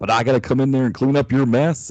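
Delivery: loud, tough, big western cowboy-hero voice. Imagining a hired voice actor scolding the others: John Wayne voice. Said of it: "pay him to talk like John Wayne".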